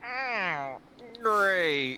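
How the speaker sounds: very high puppet voice, pitched way up. Voicing James's inner monologue for the group: Muppet voice. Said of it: "a Muppet's voice".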